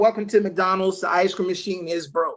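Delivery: normal talking voice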